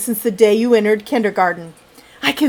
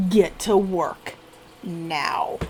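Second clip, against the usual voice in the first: slow, menacing, deadly serious, scary growl; 5 semitones lower, 10 dB quieter than usual. Reading a story aloud, the teacher tells the boy: serious, scary growl. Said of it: "in a very serious, scary voice growls".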